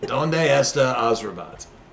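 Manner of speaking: put-on heavy, laid-on Russian accent. Voicing a woman atop a robot head asking a question: thick Russian accent. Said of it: "says in a thick Russian accent".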